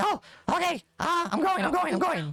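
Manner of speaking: caught off guard, giving in. Voicing Vigil as a chain pulls him up: Vigil being pulled up. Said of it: "He's like".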